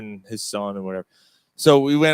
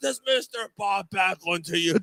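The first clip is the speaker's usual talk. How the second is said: mock full-on high-pitched screaming yell; 7 semitones higher, 5 dB quieter than usual. Retelling being screamed at while everyone around laughed, imitating Bob Backlund screaming. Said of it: "and he screamed at me".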